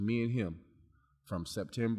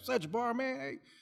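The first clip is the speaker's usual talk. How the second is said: put-on country accent, much higher pitched. Retelling how the physical therapist greeted him, in Bob's country accent. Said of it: "Country accent".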